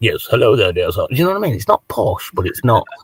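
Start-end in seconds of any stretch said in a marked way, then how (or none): 0.0-1.1 stiff, proper, polite policeman voice. Describing a strange accent, in a policeman-on-the-phone voice. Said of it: "when you listen to policemen when they're on the phone".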